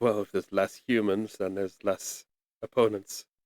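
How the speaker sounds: sly remark muttered under the breath. Narrating a scene, the speaker voices Captain Varen's remark under his breath, muttering. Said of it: "where he he mutters".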